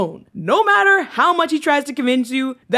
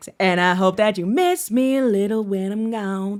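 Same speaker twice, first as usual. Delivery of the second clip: put-on Southern accent, lower pitch; 4 semitones lower, 3 dB quieter than usual. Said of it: "the entire song Miss Me is in that same accent".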